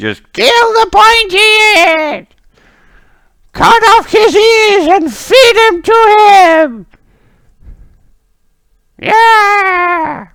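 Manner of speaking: very high, very loud, shrill angry crowd roar. Game master voices a mob the players hear, angry mob yelling. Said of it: "you hear the mob who are yelling".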